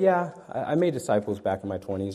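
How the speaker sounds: ordinary talk, nothing marked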